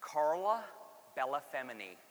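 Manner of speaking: name pronounced with an American accent. Saying a woman's italian name the american way, in an american accent. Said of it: "I'm going to say it in American".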